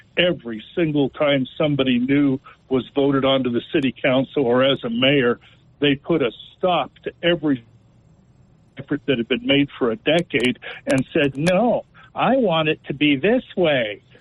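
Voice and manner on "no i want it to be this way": derisive imitated voice. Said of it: "Is that your Kamala voice?".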